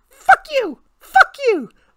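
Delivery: mocking, very high, loud angry bratty kid shriek.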